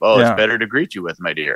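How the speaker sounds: low, deep, put-on wolf voice. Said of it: "why is your voice so deep?".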